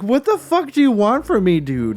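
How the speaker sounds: high, loud, furious, swooping shouted outburst. Retelling to friends how a man reacted, acting out his furious outburst as an imitation of a furious shout. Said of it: "is so grossed out".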